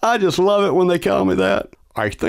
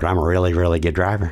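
flat, monotone character voice, pitched lower; 8 semitones lower than usual. Voicing a character in a skit who insists on driving: Rain Man voice. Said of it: "not today, Rain Man".

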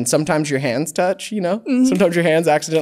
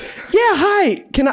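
very high-pitched telephone voice. Showing the other speaker how the speaker sounds on calls; high-pitched phone voice. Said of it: "It does go up. I go like".

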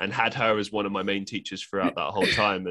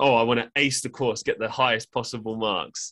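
sarcastic tone, slower; 3 semitones higher, 4 dB louder than usual. Retelling how they answered her question about a best-case scenario, retelling own sarcastic reply. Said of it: "I just sarcastically said".

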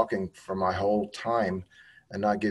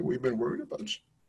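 soft, close, barely voiced hushed whisper; 4 semitones higher, 6 dB quieter than usual. Hugging a woman after her sentencing, the speaker retells what was said: retelling a whisper. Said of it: "and I whispered".

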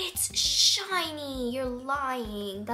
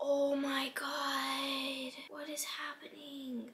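very slow, hushed, frightened murmur, god drawn out; 2 semitones higher, 8 dB quieter than usual. Speaking to viewers as their account seems compromised, scared. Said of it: "I'm really scared right now".

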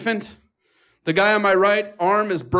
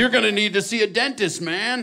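put-on surfer dude voice. Retelling what an emergency doctor said: imitating a surfer dude. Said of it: "he is talking to me like a surfer".

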